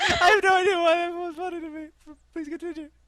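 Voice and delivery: very high, laugh-filled talk through giggles. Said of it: "I don't know why that set me off".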